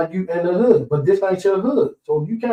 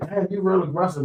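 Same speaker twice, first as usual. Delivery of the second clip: normal talking voice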